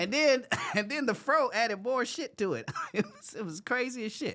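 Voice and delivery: high-pitched talking while laughing. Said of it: "I'm laughing right now".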